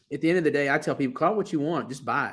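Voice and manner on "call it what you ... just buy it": ordinary delivery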